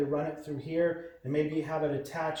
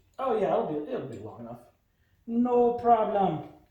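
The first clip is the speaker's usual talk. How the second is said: put-on Jamaican accent, casual and pitched up; 5 semitones higher, 4 dB louder than usual. Routing a cable while working on a bike, put-on jamaican accent. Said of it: "Now all of a sudden I'm Jamaican".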